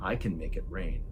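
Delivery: eerie, creepy, hollow, empty-sounding voice. Retelling a prisoner's words to two men: creepy hollow voice. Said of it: "in this totally creepy kind of hollow voice".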